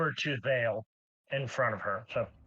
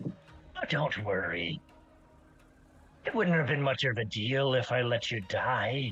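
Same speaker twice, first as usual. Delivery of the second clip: grinning character voice. Voicing Naima looking down at Dale: Naima speaking with enormous grin. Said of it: "looks down with you with this enormous grin and goes".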